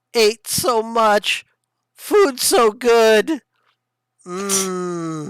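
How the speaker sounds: little high-pitched chorus of voices, drawn-out mmm. Voicing what Razul hears all around him, in little high-pitched voices. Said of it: "hear little high pitched voices".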